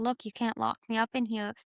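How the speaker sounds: usual speaking voice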